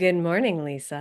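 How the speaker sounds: sultry, sexy, sick-sounding voice. Imitating how she greets the speaker in the morning, imitating a sexy sick voice. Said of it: "Her sick voice is her sexy voice".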